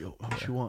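hushed whisper. Showing how to ask about pouring a shot: whispering. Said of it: "you gotta kinda whisper it".

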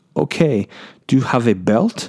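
fake Dutch accent. Retelling a woman questioning him about his group, in a bad dutch accent. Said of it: "worst Dutch accent ever".

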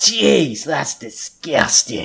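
lecherous, leering villain voice. Narrating a story, reading Chip's line, leering. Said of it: "leering away".

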